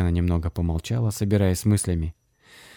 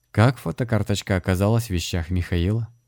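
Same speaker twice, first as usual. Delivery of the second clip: usual speaking voice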